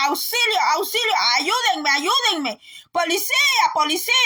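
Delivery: play-acted, contained, restrained crying out. Retelling screaming for help when held: imitating her own shouting. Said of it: "gritaba yo así".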